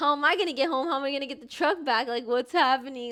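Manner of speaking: usual speaking voice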